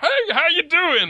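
very high, very slow, drawn-out, chatty talking-toilet voice. Voicing a talking toilet that greets a player: talking toilet voice. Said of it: "the toilet in the bathroom pipes up and goes".

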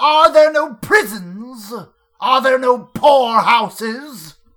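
high, bellowing voice like a stingy miser. Told they sound like a Christmas Carol character, the speaker answers in Scrooge voice. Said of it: "you sound like you're doing a character from A Christmas Carol".

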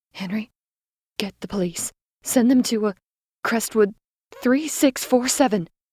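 whispering frantically, urgent. Reading a story aloud, the narrator gives an order, in a frantic whisper. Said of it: "I whispered frantically".

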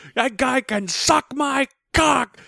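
acted-out scream. Speaker reenacting screaming at their realtor over speakerphone, retelling a scream. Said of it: "And I'm screaming".

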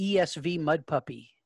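ordinary talk, nothing marked

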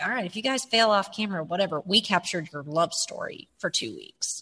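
normal talking voice

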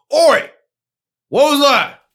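far-off, distant shout, very high and loud. Voicing an unseen figure who hears the attack: distant shout. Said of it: "you hear off in the distance".

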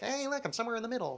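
soft, high, gender-neutral alien voice. Describing how aliens would probably sound, the speaker does a non-gendered alien voice. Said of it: "Non-gendered kind of alien voice".

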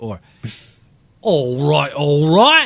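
put-on, very Cockney East London accent. Showing a starter phrase for a British accent: put-on Cockney accent. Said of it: "That's very Cockney".

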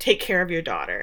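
ordinary delivery

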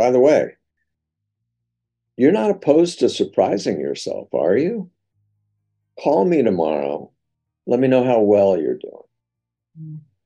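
casual sing-song delivery. Showing how he signs off with people once their resistances are down, very casual. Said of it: "Now I'm doing that very casually".

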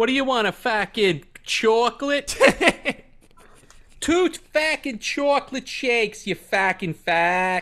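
full Boston accent, high, shrill and loud. Talking about milkshakes with a friend, showing how a Bostonian says it: Boston accent. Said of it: "Say it like a Bostonian".

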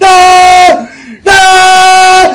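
put-on tortured screaming. Recounting a game scene, voicing a man being forced to drink, retelling tortured screaming. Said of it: "he's screaming as if you're torturing him".

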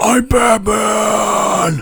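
loud, high, belted, with final word drawn out. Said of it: "Keep it down".

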